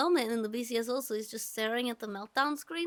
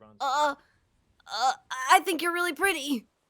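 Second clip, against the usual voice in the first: put-on loud, stock anime boy delivery; 3 semitones higher, 7 dB louder than usual. Describing how someone talks, like every anime guy, in an anime guy voice. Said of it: "Tony looks like he talks like".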